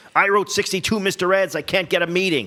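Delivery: put-on old showbiz man voice, pitched very high. Imitating one of those old entertainment industry guys: imitating an old entertainment industry guy. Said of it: "I sound like an old man".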